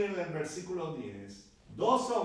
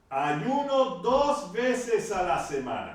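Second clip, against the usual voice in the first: loud, commanding, authoritative voice; 6 dB louder than usual. Retelling a man praying to himself for all to hear, in a mock commanding voice. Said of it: "pero con voz de mando".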